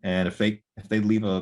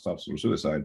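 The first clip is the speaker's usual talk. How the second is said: low, mumbled mutter under the breath; 5 semitones lower, 4 dB quieter than usual. Retelling naming their employer when people asked: imitating muttering under breath. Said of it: "under my breath".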